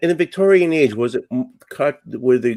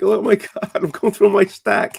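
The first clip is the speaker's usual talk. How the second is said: acted, alarmed, pitched-up panicked exclamation; 7 semitones higher than usual. Retelling own search through comics for the other speaker: imitating own panic. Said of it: "You really had me panicking".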